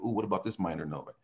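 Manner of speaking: ordinary delivery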